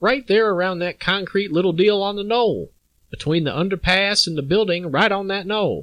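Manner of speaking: put-on southern Texas accent. Retelling the shooting scene, describing the spot by the knoll in a southern Texas accent. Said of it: "that's my southern Texas voice".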